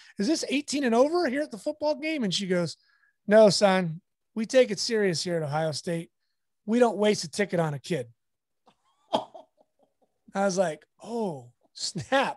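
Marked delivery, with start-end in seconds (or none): 0.2-2.3 very high, playful, joking tone. Getting a media pass at a football game, the speaker asks the woman: retelling a joking question.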